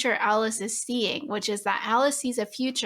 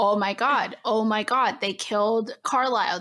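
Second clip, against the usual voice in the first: normal talking voice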